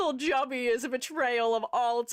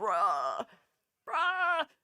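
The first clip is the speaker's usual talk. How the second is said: odd, weirdly gravelly rasping voice, pushed slightly down; 3 semitones lower than usual. Retelling saying bruh when upset: imitating own weirdly gravelly lower voice. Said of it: "made my voice, like, weirdly gravelly and slightly lower".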